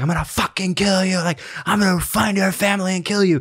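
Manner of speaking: acted, very high-pitched, raging, furious scream. Retelling how a man screamed at an older driver, retelling a scream. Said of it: "starts like screaming at him".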